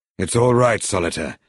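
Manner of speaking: ordinary delivery, nothing marked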